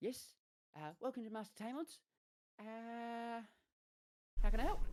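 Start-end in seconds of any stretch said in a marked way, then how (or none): 1.0-4.8 put-on teenage satyr voice, much higher and louder. Narrating a scene, voicing a small teenage satyr who greets the arrivals, teenage satyr voice. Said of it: "you just hear a voice just like that".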